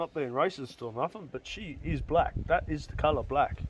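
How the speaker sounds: ordinary talk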